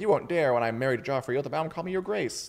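fast, condescending, very haughty lording-over tone. Retelling how a character lords it over Arya in private, mock-haughty. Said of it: "kind of acting very haughty".

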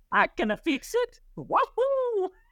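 very high, swooping Italian cartoon voice. Joking that the mechanic who fixed the windshield sounded like Mario, in a Mario voice. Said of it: "Why did your mechanic sound like Mario?".

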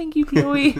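mock tiny, very small voice. Imitating the other speaker's thanks to a listener: imitating a tiny voice. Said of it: "that was the tiniest voice in the world".

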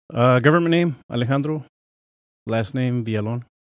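full, heavy Spanish accent. A guest gives his name on the show, in a full spanish accent. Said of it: "you did it in a full fucking accent".

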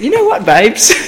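very high, loud Essex accent. Trying out different accents with another speaker: essex accent.

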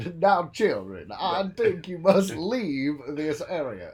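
put-on very loud, high, weak southern gentleman accent. Describing their version of a horror character, the speaker performs it in a weak put-on accent. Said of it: "I wish I could do that accent better".

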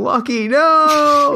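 play-acted very high, loud, shrill scream, no stretched long. Retelling a character's cry as he runs at the dwarf: imitating a scream. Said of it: "because he's screaming".

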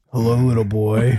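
put-on very deep voice. Imitating a buddy greeting a little child: imitating Scott's very deep voice. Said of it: "who has the deepest voice ever".

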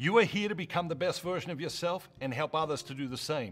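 badly done put-on Australian accent. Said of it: "we butchered Matthew Kelly".

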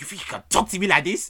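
high, loud, angry delivery.

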